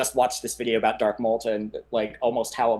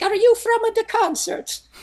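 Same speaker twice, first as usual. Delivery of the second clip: put-on Italian accent, higher and louder; 5 dB louder than usual. Retelling a boy's question at a cathedral: imitating an Italian accent. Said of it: "He had an Italian accent too, so if I butcher this".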